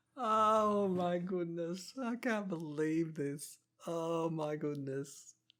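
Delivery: high talk broken up by laughter. Reacting to a failed skill test in a card game, laughing while talking. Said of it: "I'm sorry to laugh so much".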